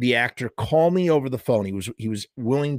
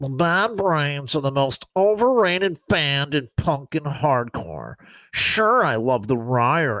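play-acted snide, sarcastic, snarky put-on voice; 2 semitones higher than usual. Reading a man's words aloud as he imagines him, mock-snarky voice imitating Al. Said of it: "read this in a snarky kind of voice".

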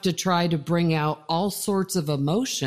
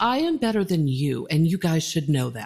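quick, slightly snooty, looking-down tone. Demonstrating her Sandra voice for listeners, slightly snooty. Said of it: "making sure that my voice sounds slightly snooty".

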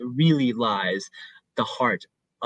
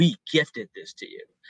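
mock-pompous, acted pompous tone. Retelling a show scene, acting out a character's words: mock-pompous. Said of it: "she comes off really pompous".

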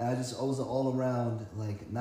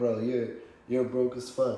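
mock mocking laugh while talking, louder; 4 dB louder than usual. Retelling how a roommate laughed at being broke: imitating someone laughing while talking. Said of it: "he's just laughing at me like".

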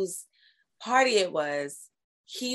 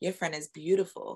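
whispered voice; 3 semitones lower, 3 dB quieter than usual. Retelling how a man whispered to a friend: imitating someone whispering. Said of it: "he whispers to my friend".

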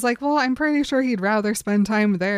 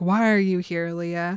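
put-on growling voice, lower; 3 semitones lower than usual. Retelling a story scene where Jacob confronts Leah: Jacob growling. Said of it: "Jacob starts growling at her".

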